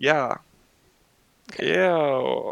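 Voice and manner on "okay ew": unenthusiastic "ew", mild disgust. Moving on to the cringy topic, reacting with a half-hearted ew. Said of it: "That was the most half-hearted, like, level of disgust I've ever given".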